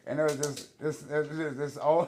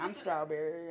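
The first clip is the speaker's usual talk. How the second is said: male speaker's fake, put-on feminine voice; 2 semitones higher, 6 dB quieter than usual. Retelling how the man at the door answered: imitating a man doing "the voice". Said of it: "then he does the voice".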